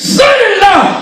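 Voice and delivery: very high-pitched, loud, hollered shout. Retelling how he answered the phone call, imitating a loud shout. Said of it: "and he loud".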